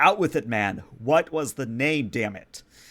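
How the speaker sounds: exasperated, impatient, demanding tone. Voicing a prince shaking the sheriff for a name: prince shaking someone, demanding. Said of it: "eventually he starts shaking the sheriff again and says".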